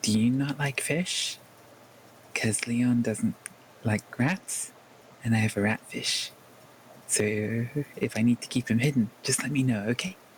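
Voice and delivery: imitated conspiratorial, secretive whisper. Retelling what he whispered over the top of the bar, imitating a conspiratorial whisper. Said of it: "sort of whisper conspiratorially".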